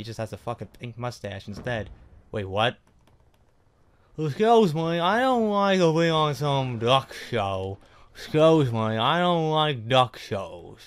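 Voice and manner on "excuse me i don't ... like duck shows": slow, loud, drawn-out Southern drawl. Reacting to a Duck Dynasty comparison, in [name]'s slightly Southern voice. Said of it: "It sounds like a little bit of Southern".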